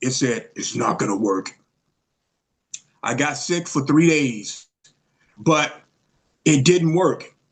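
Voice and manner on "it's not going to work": imitated very deep voice, pitched lower. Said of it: "that same voice that was very deep".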